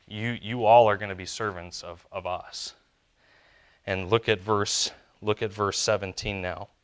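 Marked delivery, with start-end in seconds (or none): none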